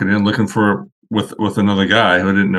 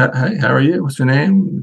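put-on South African accent, pitched up; 5 semitones higher than usual. Retelling meeting Mr. Murray at car week and his greeting: Mr. Murray's South African accent. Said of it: "in South African accent".

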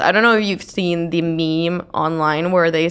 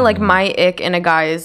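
normal talking voice

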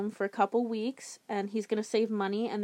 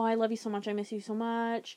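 ordinary talk

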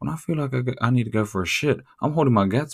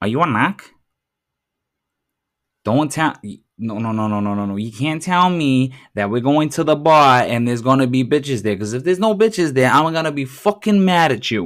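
put-on Boston accent; 2 semitones higher, 7 dB louder than usual. Mocking a tough-talking guy, acting out his lines: Boston accent. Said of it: "pops out with a Boston accent".

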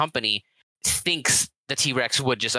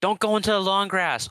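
high, yelled, shouted call; 7 semitones higher than usual. Retelling a movie scene where a guy walks into grass: imitating someone yelling. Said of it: "just yells".

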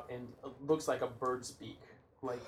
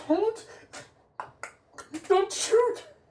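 muffled voice, much higher and louder; 8 dB louder than usual. Voicing an unknown figure hiding its face in a role-play scene, muffled voice. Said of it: "Their voice is muffled".

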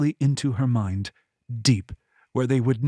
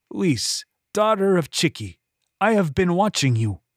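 strong, bold, arrogant voice, pitched up; 5 semitones higher than usual. Narrator voices the old man speaking through another's mouth, in a bold, arrogant voice. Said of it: "but stronger, bolder, and full of arrogance".

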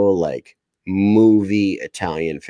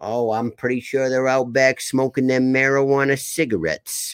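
put-on old man voice with an Italian accent; 5 semitones higher than usual. Quoting Graham's answer to a question, done in Graham's accent. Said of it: "I want [name] to do a full podcast in that accent".

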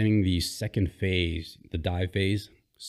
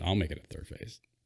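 put-on muttering under breath, quieter; 7 dB quieter than usual. Retelling a reply to an instructor in class, imitating muttering under breath. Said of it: "And I was under my breath".

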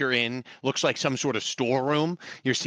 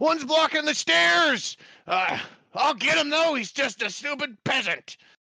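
very high bandit calling-out voice; 12 semitones higher than usual. Narrating a scene, voicing bandits up the stairs: bandit crying out. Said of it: "You hear these bandits up here cry out".

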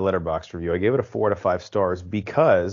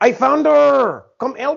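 fake scream, Belgian accent, much higher, louder; 8 dB louder than usual. Watching a movie with friends, the speaker voices a fireman's scream in Belgian accent. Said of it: "screaming for help with his belgian accent".

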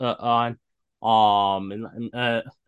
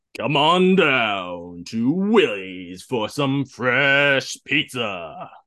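put-on announcer voice, drawn-out, pitch falling; 3 dB louder than usual. Saying a requested line on the spot, in an announcer's voice. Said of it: "give me something to say in my announcer's voice".

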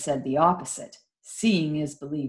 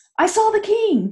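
very high, out-of-breath outburst; 6 dB louder than usual. A girl bursts into a cottage to announce something, breathless exclamation. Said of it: "exclaimed Amanda, as she burst breathlessly".

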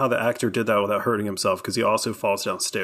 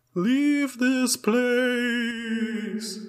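put-on spooky voice, higher; 13 semitones higher than usual. Retelling a scene where a dead man's mouth speaks: spooky voice. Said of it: "a spooky voice is coming out".

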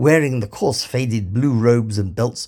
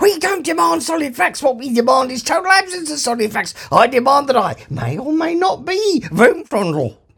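shrill, very high, bawling shout. Reading the story, the younger philosopher speaks up to the programmers: Vroomfrondle shouting. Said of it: "shouted the younger of the two, / bawled the younger one. / bawled the younger one. / shouted the younger of the two, / bawled the younger one".

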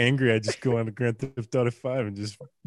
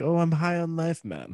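put-on Czechoslovakian-style Eastern European accent, pitched up; 5 semitones higher, 4 dB quieter than usual. Quote a man from a Grand Theft Auto video game in a Czechoslovakian or maybe Ukrainian accent. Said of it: "he says it in like a Czechoslovakian accent".

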